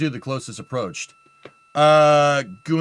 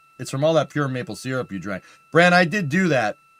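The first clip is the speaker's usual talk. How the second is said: ordinary talk, nothing marked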